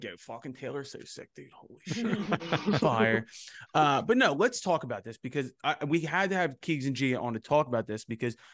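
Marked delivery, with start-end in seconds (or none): 0.0-3.3 put-on strong Philadelphia accent, laid on thick. Recalling how they sounded by the end of their video, heavy philly accent. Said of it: "the Philly accent started coming out really bad".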